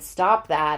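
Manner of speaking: ordinary delivery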